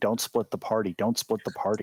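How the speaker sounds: ordinary delivery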